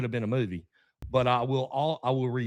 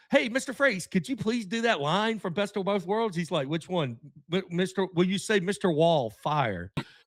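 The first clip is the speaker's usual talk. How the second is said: put-on pitched-up excited Southern accent; 6 semitones higher than usual. Retelling asking Jonathan Frakes to do a Star Trek line, retelling own excited Southern voice. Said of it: "in my Southern, real excited, probably real fast".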